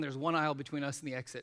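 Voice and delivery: ordinary talk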